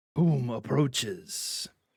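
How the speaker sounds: raspy, rasping put-on character voice. Narrating a game, a figure turns to face the approaching party, raspy voice. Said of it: "the familiar raspy voice call out".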